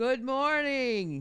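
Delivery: full-out, loud, high-pitched shouting. Repeating good morning to Gramps, who asked to speak louder, yelling. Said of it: "you don't have to yell".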